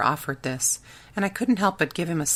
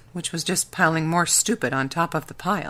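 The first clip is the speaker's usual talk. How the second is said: ordinary delivery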